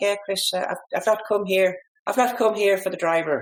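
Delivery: attempted Irish accent. Retelling what a man he fitted for a driver said, in a put-on irish accent. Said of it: "I'll have a crack at the accent".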